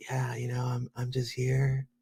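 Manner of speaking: mock hushed voice. Imagining the other speaker giving a talk in bed: imitating someone talking very quietly. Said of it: "so quiet".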